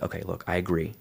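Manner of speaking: very soft, gentle, agreeable, softened tone. Showing how a sales line should sound: very soft tone. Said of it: "It's very soft".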